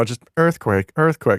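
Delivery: mock meek, small, timid voice. Describing a phone's earthquake alert, imitating its meek little voice. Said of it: "a meek little voice".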